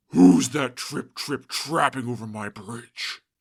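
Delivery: menacing, deep, loud snarling troll voice. Narrator reading a fairy tale, the troll looming over a small goat, snarling troll voice. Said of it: "He snarled".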